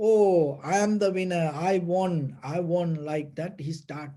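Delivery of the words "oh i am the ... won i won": ordinary talk, nothing marked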